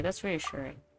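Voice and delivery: soft, low dejected voice. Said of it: "Why do you sound so dejected?".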